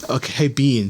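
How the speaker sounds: ordinary talk, nothing marked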